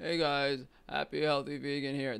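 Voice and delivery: voice of a dying man. Imitating a vegan video host's greeting before watching: imitating Ryan sounding like he's dying. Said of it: "The guy sounds like he's fucking dying".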